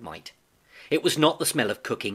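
plain reading voice

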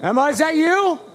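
very high, loud shrieking scream. Calling out for emma in the night: screaming. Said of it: "stop screaming".

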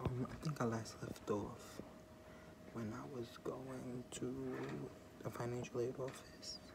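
soft, quiet, unvoiced whisper.

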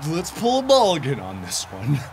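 odd, unnatural, made-up strange voice. A streamer playing a game with a friend speaks up: strange voice. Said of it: "*Strange voice*".

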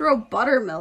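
ordinary delivery, nothing marked

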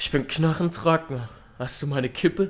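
plain

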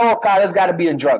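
ordinary delivery

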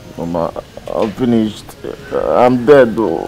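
tearful crying speech, words broken by sobbing. Telling Mama what is wrong after being asked: crying while speaking. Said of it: "Why are you crying".

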